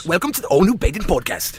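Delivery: clumsy, bad, attempted British accent. Answering a request to do a British voice: attempted British accent. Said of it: "Can you do a British voice?".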